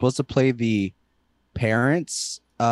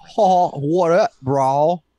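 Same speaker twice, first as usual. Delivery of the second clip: put-on California accent, much higher, louder; 3 semitones higher, 3 dB louder than usual. Needing a reference before talking in a Cali accent, trying a Cali accent. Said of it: "gotta do a Cali server accent".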